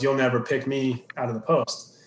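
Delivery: ordinary talk, nothing marked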